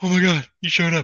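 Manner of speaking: very high-pitched, weepy, blubbering crying male voice. Mocking a father who cries at Christmas reunions, imitating a crying dad. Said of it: "and then go to Christmas and he'd be crying".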